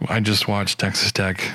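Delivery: put-on depressed, low-spirited voice. Imitating another speaker's voicemail message: imitating a depressed voice. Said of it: "you just sounded so depressed when you're like".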